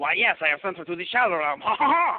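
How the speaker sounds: loud put-on French-accented crab voice. Acting out the crab from the movie: French accent. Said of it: "the crab has a French accent".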